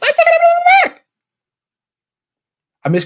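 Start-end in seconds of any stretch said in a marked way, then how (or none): 0.0-1.0 put-on high, excitable comedian voice, pitched higher. Breaking down a play and quoting a line: Chris Tucker voice. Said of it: "and Chris Tucker voice".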